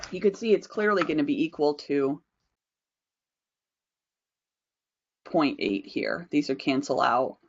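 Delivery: hoarse voice giving out. Explaining a calculation while the voice is starting to go: voice giving out. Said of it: "My voice, I think, is starting to finally go".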